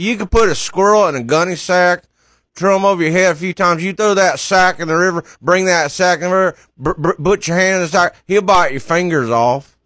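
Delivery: put-on Southern drawl. Doing an impression for a radio caller to guess: Doctor Phil impression. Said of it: "It's Doctor Phil".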